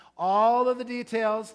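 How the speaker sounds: all of the details stressed, punched high and loud.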